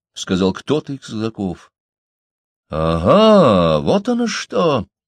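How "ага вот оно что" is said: affronted, offended cry, very slow, drawn-out ага. A governor hears a passer-by carried a note from the Kandinskys, offended exclamation. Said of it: "обиженно воскликнул губернатор".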